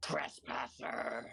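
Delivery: eerie, rough, screechy inhuman voice. The game master voices something in the swirling water addressing the players, slightly screechy inhuman voice. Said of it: "a vaguely inhuman, slightly screechy voice".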